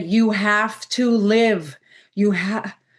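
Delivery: slow, choked-up words, voice catching with emotion. Speaker retelling a man's story, getting choked up. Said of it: "I'm getting choked up saying it".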